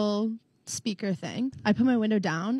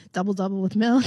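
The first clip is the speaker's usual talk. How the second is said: ordinary talk, nothing marked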